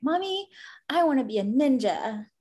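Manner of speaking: imitated, put-on little girl voice. A mother acts out how her daughter talks, imitating Harley. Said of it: "this is how she says that".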